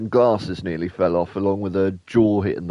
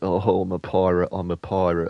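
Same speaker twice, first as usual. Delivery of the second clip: plain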